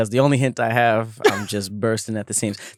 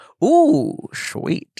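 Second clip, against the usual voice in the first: very high, put-on storybook cartoon character voice. Show the voice you always do and did on the show before, a Grinch voice. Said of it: "doing the Grinch voice".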